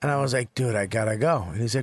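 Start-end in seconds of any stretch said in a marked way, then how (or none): 0.5-1.5 wise-guy, mobster-style, dismissive brush-off voice. Retelling what was said to a kid leaving: like a mobster. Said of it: "you talk to him like a mobster?".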